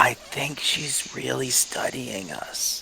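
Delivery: slow, hushed stage whisper that carries too far. Whispering in character to a companion in front of her: hushed too-loud whisper. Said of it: "the hushed, too loud whisper".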